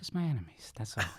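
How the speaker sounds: soft, hushed, barely above a whisper. Showing the others the Michael Corleone impression, Michael Corleone impression. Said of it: "Michael Corleone basically just whispers".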